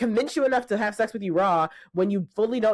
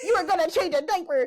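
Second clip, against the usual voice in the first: mock angry scolding, higher; 9 semitones higher than usual. Imagining a mother cussing out a man across the table: imitating a mother cussing someone out. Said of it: "my mother would have jumped across the table and cussed that man out".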